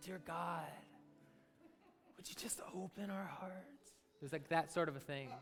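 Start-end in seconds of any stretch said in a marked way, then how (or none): 0.0-3.9 whispered, hushed, breathy, reverent prayer voice. Showing the audience the way they used to pray: holy prayer voice. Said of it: "It was like my holy prayer voice".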